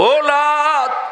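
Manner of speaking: weeping, wailing cry.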